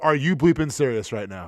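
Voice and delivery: play-acted, calm, no-nonsense, unemotional stern parent voice. Retelling confronting a stranger who puked on him: imitating a stern parent tone. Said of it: "like a parent".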